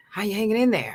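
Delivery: put-on voice between talking and whispering. Retelling a friend's phone call: horrible Chris Spencer impersonation. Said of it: "my horrible impersonation of Chris Spencer".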